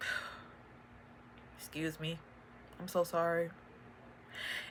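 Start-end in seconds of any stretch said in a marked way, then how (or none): 1.6-3.5 very soft, choked up, voice catching. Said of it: "It makes me emotional".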